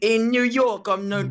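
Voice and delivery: put-on British accent. Attempting a new york line, coming out in a put-on british accent. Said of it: "that's a British one".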